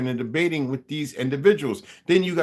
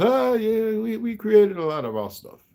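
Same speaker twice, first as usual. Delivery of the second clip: put-on, pitched-up Yiddish-inflected accent; 7 semitones higher than usual. Retelling what a rabbi said when asked: imitating the rabbi's accent. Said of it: "I ain't gonna keep doing his accent".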